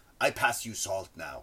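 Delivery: low, put-on Japanese accent. Retelling how someone repeated Miyagi's words back to him, in Miyagi's accent. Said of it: "but he would do it in that accent".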